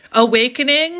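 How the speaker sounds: loud yelling. Giving a card reading to the listener: loud, yelling. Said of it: "Sorry, why am I yelling at you?".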